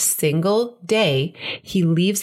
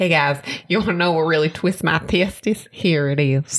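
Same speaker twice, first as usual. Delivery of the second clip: put-on southern US accent. Co-hosts mimic their catchphrase to listeners: put-on southern accent. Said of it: "Why do we have this like southern accent when we say it?".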